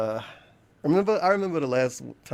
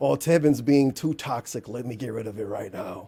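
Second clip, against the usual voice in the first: put-on evil man voice. Imitating Ari Lord deciding to remove the videos: evil man voice. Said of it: "I gotta give him the evil man voice".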